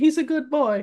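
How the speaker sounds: put-on very high old Italian grandma voice, bad Italian accent. Talking about a guy called David, doing an old Italian grandma voice. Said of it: "old Italian grandma with it".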